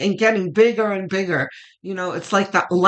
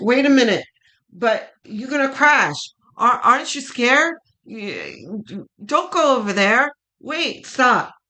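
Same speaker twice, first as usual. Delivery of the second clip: little devil on the shoulder voice; 4 semitones higher than usual. Explaining the angel and devil on your shoulder, voicing the devil. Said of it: "And the devil is like".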